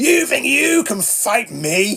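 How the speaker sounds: high, very slow, drawn-out threatening yell. Retelling threatening two teenagers with a stick held aloft: imitating own past screaming. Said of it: "I'm screaming".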